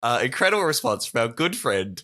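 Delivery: normal talking voice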